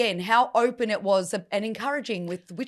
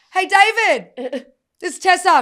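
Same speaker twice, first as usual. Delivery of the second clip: put-on child shout, higher and louder; 8 semitones higher, 8 dB louder than usual. Retelling a walk home from the park: imitating Mason screaming out. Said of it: "he screams out to his neighbour".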